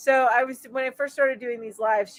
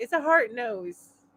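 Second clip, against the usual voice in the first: plain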